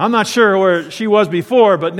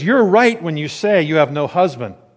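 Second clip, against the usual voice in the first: ordinary talk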